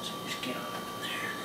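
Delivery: hushed, very soft, breathless whisper.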